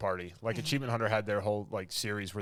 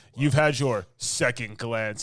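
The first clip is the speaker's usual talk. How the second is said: mimicked delivery, louder than normal; 2 semitones higher, 7 dB louder than usual. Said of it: "just gives it that".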